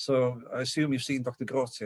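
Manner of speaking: ordinary delivery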